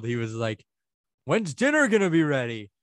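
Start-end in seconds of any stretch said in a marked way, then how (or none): 1.3-2.6 high-pitched, loud yell. Retelling a surprise visit, quoting dad: imitating dad yelling. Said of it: "my dad yelled".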